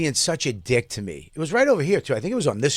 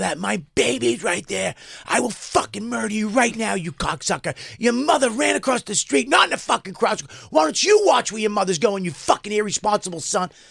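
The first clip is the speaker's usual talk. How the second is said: mock raging, high, screamed furious rant; 7 semitones higher than usual. Speaker retells confronting a man after pulling the car over: retelling own screaming. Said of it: "I'm screaming".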